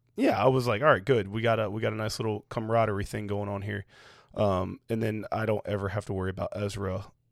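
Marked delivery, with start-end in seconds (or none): none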